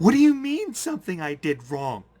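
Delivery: put-on very high, swooping, furious, upset little girl voice. Voicing a character answering an accusation: very angry, upset little girl's voice. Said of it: "little girl's voice".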